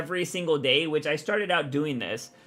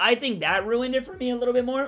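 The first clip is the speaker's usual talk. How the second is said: voice cracking mid-sentence, pitched up; 7 semitones higher than usual. Giving an opinion on a show, with voice cracking. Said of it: "my voice cracked".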